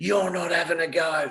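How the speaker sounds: yelling. Retelling how a senior teammate yelled at a younger player: imitating someone yelling. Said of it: "he yelled at Bucks".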